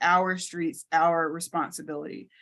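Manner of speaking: ordinary talk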